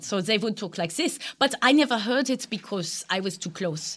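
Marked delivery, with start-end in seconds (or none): 0.0-1.2 put-on German accent. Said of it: "they talked with a German accent".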